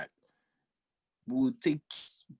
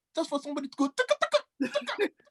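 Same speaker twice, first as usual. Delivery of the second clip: mock squeal, very high-pitched, rattled off. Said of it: "I said".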